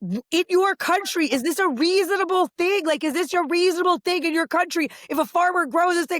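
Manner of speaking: put-on very high, angry, losing-it tirade. Speaker recounting losing her mind on a woman, retelling an angry outburst. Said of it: "I'm losing my mind on her".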